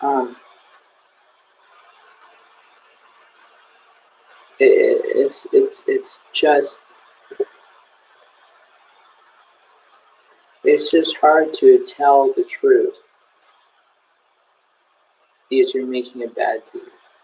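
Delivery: holding back tears. Speaking to viewers on video, holding back tears. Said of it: "I'm trying not to cry on video".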